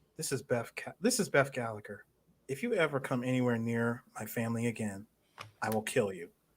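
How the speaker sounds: put-on blunt, very direct, stern, no-nonsense tone. Retelling a character's phone threat to a man: imitating a very direct, stern threat. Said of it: "she said it very, very direct and stern".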